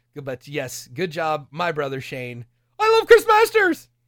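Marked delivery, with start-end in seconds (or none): 2.8-3.8 very loud, shrill, high-pitched yell. Retelling a brother shouting from a quiet crowd: imitating a loud fan shout. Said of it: "like, really loud".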